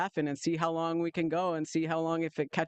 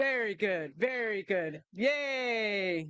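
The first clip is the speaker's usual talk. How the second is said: hammed-up, corny cheer with drawn-out yay; 4 semitones higher than usual. Showing the group what to do after each transition, leaning into the corny. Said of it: "Lean into the corny".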